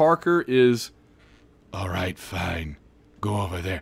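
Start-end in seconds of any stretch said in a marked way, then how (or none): 1.7-3.8 deep, low superhero voice. Acting out how Parker was voiced, line done in a Batman voice. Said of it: "make Parker sound like Batman".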